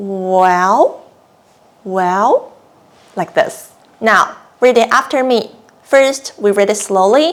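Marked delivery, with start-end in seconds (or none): 0.0-2.5 musing well, dipping then rising. Teaching a tone to learners, demonstrating it with a thinking, falling-then-rising well. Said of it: "It's like you're thinking something and say".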